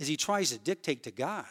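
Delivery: ordinary delivery, nothing marked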